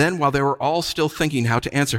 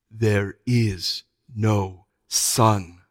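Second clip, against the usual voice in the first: grave, deep, very slow voice; 5 semitones lower than usual. The witch repeats her words to the four of them, in a softer, deeper voice. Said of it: "She repeated in a softer and deeper voice".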